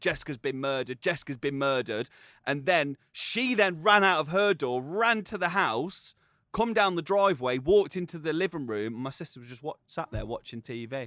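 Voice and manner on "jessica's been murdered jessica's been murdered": normal talking voice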